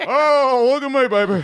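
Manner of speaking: very high, slow, drawn-out big-shot swagger. Doing a mocking impression of the fan club head: impression of DeMarcus. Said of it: "How good impression of you?".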